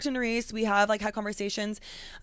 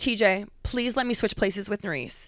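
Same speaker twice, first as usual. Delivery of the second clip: desperate, begging plea. Retelling asking t j to switch places: retelling own desperate plea. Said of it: "And I was like".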